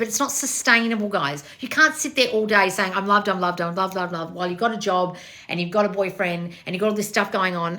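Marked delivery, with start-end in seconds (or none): 2.9-4.3 mock, mechanical, robotic repeating voice. Mocking someone repeating affirmations all day: imitating robotic affirmations. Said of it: "robotic affirm".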